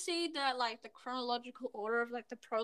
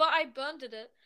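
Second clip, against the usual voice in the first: plain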